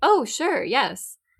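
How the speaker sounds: high-pitched, polite tone. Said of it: "interjecting in a very polite way".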